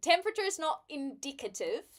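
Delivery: fake New Zealand accent. Mid-conversation, the speaker drops one remark in a put-on Kiwi accent. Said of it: "that was my Kiwi uh accent".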